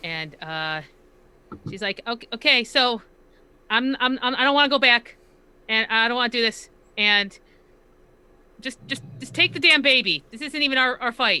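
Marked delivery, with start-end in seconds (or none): 2.1-11.4 very scared, fearful, frightened voice. Playing a character handing over a baby: scared, as Nova. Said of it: "appearing very scared".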